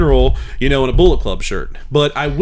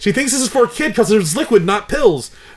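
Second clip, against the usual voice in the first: high-pitched, scolding inner voice. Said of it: "the other voice chimes in and goes".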